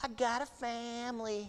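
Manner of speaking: put-on little, high, slow, sing-songy child voice.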